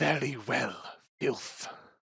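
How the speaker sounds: hushed whispering character voice. Voicing a captive who is threatened and answers the party: whispering captive character. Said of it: "she whispers, whispers to you".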